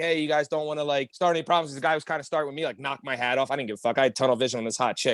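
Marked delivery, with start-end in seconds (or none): none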